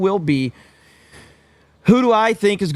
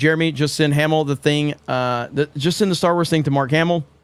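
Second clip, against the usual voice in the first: ordinary talk, nothing marked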